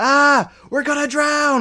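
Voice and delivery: put-on panicked child voice, yelling.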